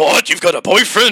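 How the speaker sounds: mock furious angry dad outburst. Retelling a game scene where a father reads a letter: imitating an angry dad. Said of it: "angry dad".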